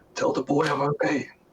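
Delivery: unvoiced, breath-only whisper. Narrating a hurt man who pushes himself up and speaks: whispering. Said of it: "he whispers to you".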